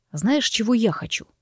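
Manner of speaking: ordinary talk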